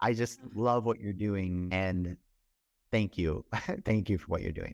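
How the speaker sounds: thankful, heartfelt, close to tears. Speaker thanking the other person for what they're doing, tearing up a little. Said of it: "I'm like tearing up a little bit".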